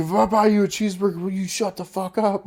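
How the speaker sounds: mock enraged, high-pitched, furious screaming rant. Retelling yelling at a heckler from the stage, retelling a furious scream. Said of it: "I'm just screaming at this chick".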